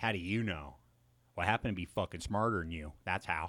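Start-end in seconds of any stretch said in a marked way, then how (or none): 0.0-0.8 mocking condescending tone. Retelling how someone questions them: imitating a condescending voice.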